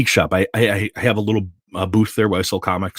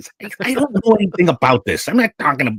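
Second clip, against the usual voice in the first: put-on heavy Chicago accent, very high, sing-song, swooping; 10 semitones higher than usual. Retelling the father's reply after being corrected by his child: thick Chicago accent. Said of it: "my dad has a very thick Chicago accent".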